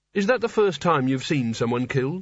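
plain

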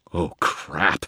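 mumbled, muttered under the breath. First-person narrator, as a ghost grows in the room, reacts: muttered. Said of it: "I muttered".

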